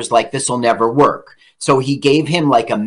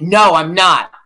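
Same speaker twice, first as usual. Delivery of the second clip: put-on Brooklyn accent with raised pitch; 4 semitones higher than usual. Answer the director you hated and fought on set, in Harvey Keitel's Brooklyn accent. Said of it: "that Brooklyn accent of yours".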